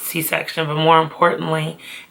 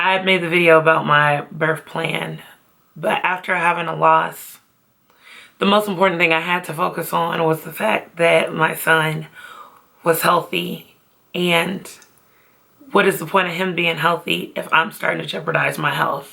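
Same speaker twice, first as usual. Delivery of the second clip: voice on the edge of crying, fighting tears. A mother talking about her son's birth, trying not to cry. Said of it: "I'm trying not to cry".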